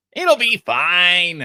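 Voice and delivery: high, fine, drawn-out voice register. Doing the usual impression of another speaker: impression of the other speaker. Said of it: "this is when [name] does an impression of me".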